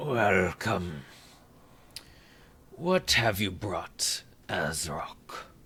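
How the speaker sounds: soft, croaked-out voice. Narrator voicing him as the listeners approach, croaking voice. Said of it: "he he he croaks out".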